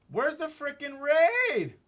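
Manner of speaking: very high voice breaking into a squeak. A streamer, welcoming an incoming raid, asks where the raid is, voice cracking. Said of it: "My voice cracked".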